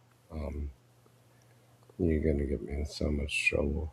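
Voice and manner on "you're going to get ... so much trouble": very soft, quiet, beaten, defeated resignation. Agreeing to play a clip that someone else wanted to show: defeated. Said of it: "Why does Pig sound defeated?".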